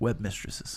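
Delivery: sly, low, hushed whisper.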